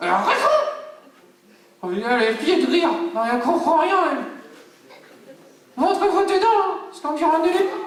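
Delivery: very high, unruly, hard-to-handle puppet voice. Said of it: "[name] la marionnette qui est plutot dur à gérer".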